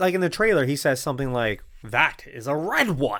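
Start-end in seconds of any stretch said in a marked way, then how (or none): 1.8-3.2 slow delivery leaning on odd inflections. Quoting a line from a trailer: Venom voice, weird inflections. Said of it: "It's weird inflections".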